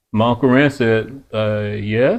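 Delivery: plain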